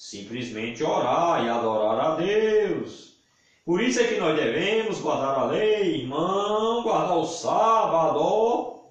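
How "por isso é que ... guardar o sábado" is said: put-on pious, reverent, churchy preacher tone. Speaker mocks a view before answering it, in a mock holy voice. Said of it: "Falando com essa voz santa".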